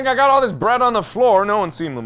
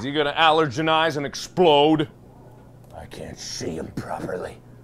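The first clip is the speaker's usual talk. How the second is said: very low, hushed, soft voice; 8 semitones lower, 6 dB quieter than usual. Playing a creeper in a game video, speaking in Creeper voice. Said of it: "[Creeper voice]".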